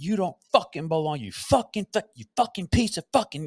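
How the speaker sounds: acted-out angry yells. Recounting a man who cussed and yelled nonstop, imitating someone yelling. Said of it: "he just cussed and yelled".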